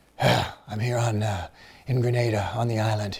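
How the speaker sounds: roughened documentary-style narrator voice. Showing how he narrated after screaming into a pillow: imitating his own rougher narration voice. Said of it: "to get that rougher Les Stroud sound".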